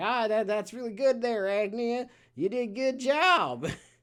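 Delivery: put-on heavy cowboy accent, high and loud. Quoting a game character, making fun of Portuccio's very cowboy accent. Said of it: "making fun of Portuccio and his very cowboy accent".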